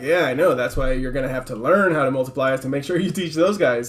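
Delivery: ordinary delivery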